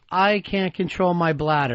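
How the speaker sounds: ordinary delivery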